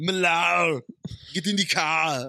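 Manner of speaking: put-on Boston accent layered over an Austrian accent. Someone asks you for an impression, so answer as Arnold doing a Boston accent. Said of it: "Can you do Arnold doing a Boston accent?".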